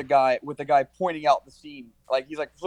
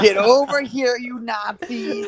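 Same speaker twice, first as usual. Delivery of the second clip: high, slow cartoon parrot voice; 8 semitones higher, 5 dB louder than usual. Picturing a movie scene redone by Gilbert Gottfried, Gilbert Gottfried parrot voice. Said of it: "with his fucking parrot from Aladdin voice".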